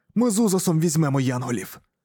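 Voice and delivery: ordinary talk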